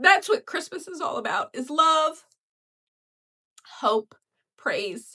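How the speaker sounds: choked-up voice. Describing the family's christmas giving tradition, the speaker gets choked up. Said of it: "now I'm getting choked up".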